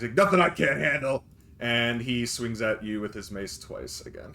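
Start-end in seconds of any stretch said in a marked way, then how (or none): 0.1-1.2 tough thug voice, loud, high, sharply yelled. A thug yells back to a voice from the hallway, yelling back. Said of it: "yell back".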